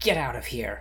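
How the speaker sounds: snarling delivery through bared teeth. Narrating a fight scene, voice her order to the beaten bandits, snarling. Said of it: "Kalaira snarls at them".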